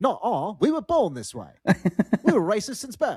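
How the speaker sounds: put-on lilting, high mid-Atlantic accent. Redoing a quoted group's reply after regretting the first voice: mid-Atlantic accent. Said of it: "I should have like some mid Atlantic".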